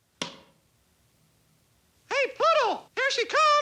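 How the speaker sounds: high-pitched voice of a little cartoon mouse. Voicing the character in a cartoon scene, Mickey Mouse voice. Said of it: "So he's got to do Mickey's voice".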